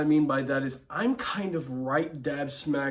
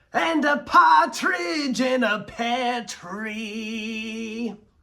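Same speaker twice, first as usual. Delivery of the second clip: very high, loud, slow drawl, "tree" dragged out; 9 semitones higher, 6 dB louder than usual. Showing lines from two Jokers, starting with Troy Baker's: Troy Baker's Joker voice. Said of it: "That's more Troy Baker".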